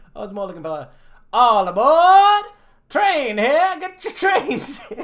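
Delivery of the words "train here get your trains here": high, very loud vendor hawking cry. Showing what they meant, the speaker hawks trains: baseball game vendor call. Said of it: "like I'm a caller at a baseball game".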